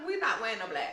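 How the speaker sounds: high-pitched, laughing delivery.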